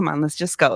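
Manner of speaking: easygoing, nonchalant, chill, unbothered tone. Retelling her mom's reply about the strange laugh: imitating mom, nonchalant and chill. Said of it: "nonchalant and chill".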